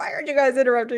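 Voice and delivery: mad, freaking-out voice. Retelling what Jamie shouted during a dungeon run, imitating someone getting mad. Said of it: "He's like getting getting mad".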